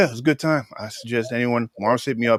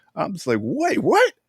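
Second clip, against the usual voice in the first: ordinary delivery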